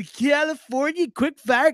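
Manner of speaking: put-on California accent, very high. A radio host announces the quick-fire question in a put-on California accent. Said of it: "my California accent was pretty solid".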